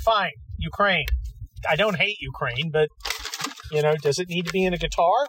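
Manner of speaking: usual speaking voice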